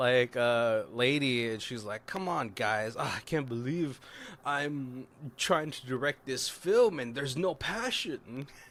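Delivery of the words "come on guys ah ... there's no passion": acted-out dramatic, passionate, theatrical drama-teacher voice. Describing a teacher directing the kids' town history play, imitating a super passionate teacher. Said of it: "super passionate".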